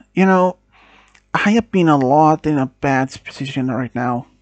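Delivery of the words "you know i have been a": plain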